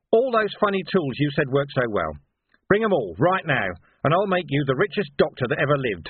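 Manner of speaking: usual speaking voice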